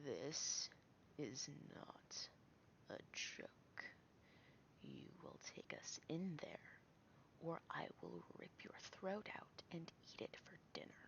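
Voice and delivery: whispered, hushed, breathy, threatening growl. Playing a character in a role-playing game, leaning in to threaten someone: growling voice. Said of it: "with a growling voice go".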